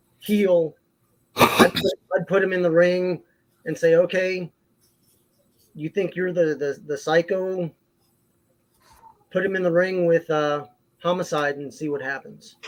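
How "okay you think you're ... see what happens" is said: ordinary talk, nothing marked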